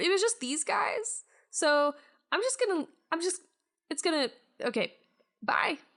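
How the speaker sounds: high, hurried, nervous, faltering bat voice.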